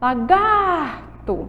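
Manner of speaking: lingering stress on stretched gar syllable in lagarto. Portuguese syllable lesson saying lagarto, stretched, stressed "gar". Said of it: "a sílaba que eu mais demorei chamando aí foi o gar".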